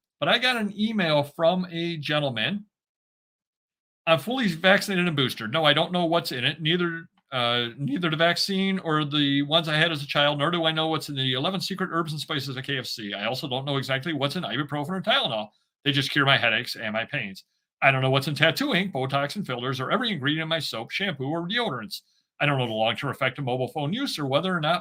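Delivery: ordinary delivery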